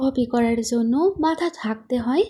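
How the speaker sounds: ordinary delivery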